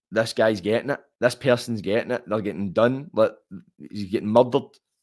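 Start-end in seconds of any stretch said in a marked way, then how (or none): none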